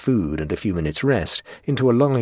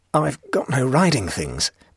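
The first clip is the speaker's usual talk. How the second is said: stammering, almost laughing, higher pitch; 5 semitones higher than usual. A castaway answers a man offering him a saddled horse; stammering, almost laughing. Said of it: "stammered the castaway".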